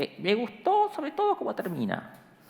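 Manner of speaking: very high, swooping sing-song voice. Retelling a call from a teacher who praises the story: imitating Elvio Gandolfo's voice. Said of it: "Elvio habla con una voz así".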